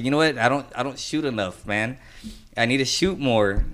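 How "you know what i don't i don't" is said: plain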